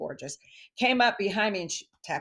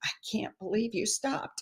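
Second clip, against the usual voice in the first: put-on tearful, crying voice, words choked through tears; 5 semitones higher, 5 dB quieter than usual. Retelling a woman's reply to a stranger who stopped: imitating a crying voice. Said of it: "in that kind of a voice".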